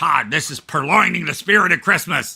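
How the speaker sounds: loud, rough, gruff voice. Retelling a joking answering-machine message someone left: imitating a gruff voice. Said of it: "somebody said in a gruff voice".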